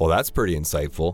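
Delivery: mocking, dry, sarcastic-jerk delivery. Showing how a sarcastic jerk would say it: sarcastic tone. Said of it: "if you want to be a sarcastic jerk like me".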